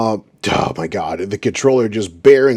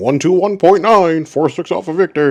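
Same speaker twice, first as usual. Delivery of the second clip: question-like upspeak, pitch rising on Victor; 9 semitones higher than usual. Mocking a pilot's radio call, speaker mimics a pilot's upward inflection. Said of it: "Again with the upward inflection".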